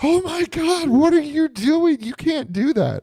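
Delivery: piercing, very high, frantic put-on panic. Retelling a scene in the car, imitating Summer freaking out. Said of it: "Summer absolutely loses her crap in the car".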